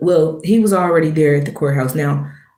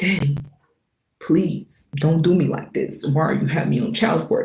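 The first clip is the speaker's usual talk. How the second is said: put-on breathy, whispered, tearful, sobbing pleading voice; 5 dB quieter than usual. Retelling a man who waited outside the courthouse bathroom, imitating someone crying. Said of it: "Literally crying".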